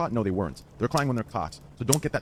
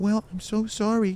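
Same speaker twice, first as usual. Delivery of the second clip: very high, put-on, fake apologetic voice; 10 semitones higher than usual. Retelling how Pokimane came into a call after cackling the day before, imitating Pokimane's soft voice. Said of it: "started using that soft voice".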